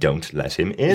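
ordinary delivery

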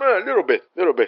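terse caricatured delivery, few words. Retelling Robert De Niro imitating his own impersonator: imitating Robert De Niro doing himself. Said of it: "o Robert De Niro faz meio que uma imitação dele mesmo".

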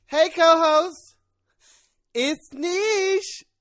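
high, loud, very slow, deliberate, drawn-out voice. Doing the co-host's catchphrase in the co-host's voice: imitating co-host's voice. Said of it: "That's you".

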